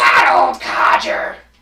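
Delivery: very low, very loud booming character voice. Correcting yourself and repeating the words on the spot, trying a Toad voice. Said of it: "trying to do a Toad voice on the spot".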